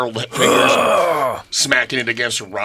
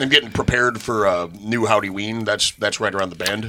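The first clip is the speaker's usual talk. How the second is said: usual speaking voice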